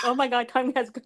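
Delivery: high voice, laughing through the words. Reacting to how long ago something was: laughing while talking. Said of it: "I'm laughing like".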